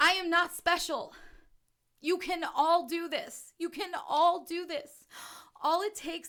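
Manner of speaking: overcome with emotion. Speaker describes their personal drive to teach humanity, emotional. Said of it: "I'm getting emotional".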